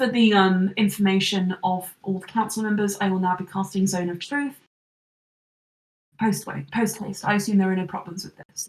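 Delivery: plain, matter-of-fact official tone into a microphone. A character leans into his microphone to address the council, speaking quietly. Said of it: "he just quietly leans forward into his microphone and says".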